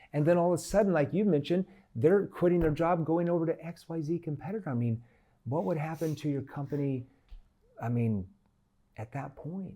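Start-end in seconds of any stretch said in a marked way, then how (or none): 4.7-9.7 soft, low voice of genuine concern. Showing how to question a prospect about their company, lowered concerned tone. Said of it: "I lower my tone into a concern tone".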